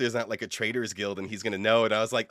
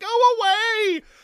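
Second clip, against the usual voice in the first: put-on very high tearful sob, drawn out; 6 dB louder than usual. Retelling a scene where a locked-in lady tells the rogue to leave, imitating someone crying. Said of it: "and is like crying".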